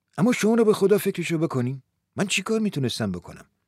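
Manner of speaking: ordinary delivery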